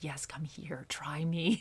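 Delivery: seductive tempting voice. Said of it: "the devil is like the seductive energy".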